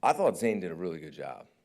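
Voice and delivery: loud, enthusiastic, emphatic, sincere-sounding delivery. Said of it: "I don't say that so enthusiastically".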